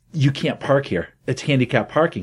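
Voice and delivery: ordinary talk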